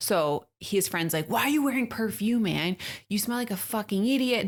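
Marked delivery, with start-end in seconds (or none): 1.3-4.5 mock furious, angry scolding. Retelling how his friend reamed him out over cologne: retelling an angry scolding. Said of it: "Just like reaming him out".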